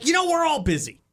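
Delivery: curt, aggressive, blunt delivery, pitched very high. Advising a reply to someone's stressed-out Facebook post, blunt and aggressive. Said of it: "you have to go aggressive aggressive. ... Say it like that".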